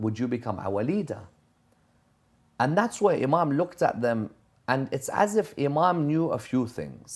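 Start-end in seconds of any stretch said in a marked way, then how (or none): none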